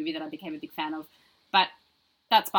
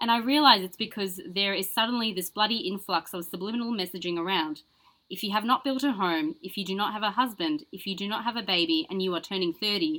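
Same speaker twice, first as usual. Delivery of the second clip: ordinary delivery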